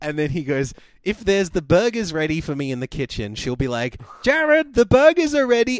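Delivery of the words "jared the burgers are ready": very high, very loud, belted-out cartoon voice. Retelling how someone imitates a woman calling Jared: almost Bob the Builder voice. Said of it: "He does an almost Bob the Builder voice".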